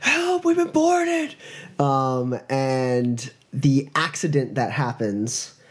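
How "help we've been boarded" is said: very high-pitched, shrill, alarmed yell. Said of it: "he's shouting, uh, being like".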